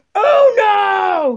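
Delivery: very high, stretched-out, drawn-out yell. Explaining how to play uno to a friend: shouting. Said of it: "why are you shouting?".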